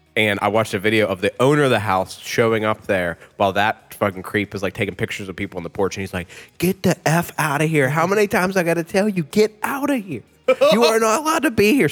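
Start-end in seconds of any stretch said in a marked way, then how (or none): 6.6-11.9 high-pitched screaming. Speaker retells a video of a house owner yelling at a creep: imitating someone screaming. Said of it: "screaming at the dude".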